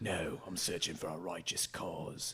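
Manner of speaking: very quiet, murmured Australian action hero voice. Explaining how they do accents by channeling a character: Mad Max voice. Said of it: "channel a character like Mad Max".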